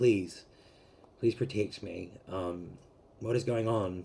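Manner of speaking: put-on, begging, pleading tone. Retelling a night of crying on the knees: retelling own begging prayer. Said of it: "begging God".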